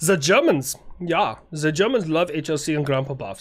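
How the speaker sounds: terrible, bad, fake German accent. Reading viewer shout-outs aloud: terrible German accent. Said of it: "I know it's a terrible German accent".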